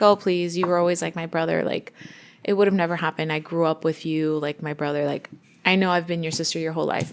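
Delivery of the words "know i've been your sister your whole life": ordinary talk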